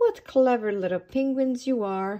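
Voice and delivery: plain reading voice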